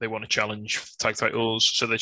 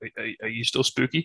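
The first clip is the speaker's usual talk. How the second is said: ordinary delivery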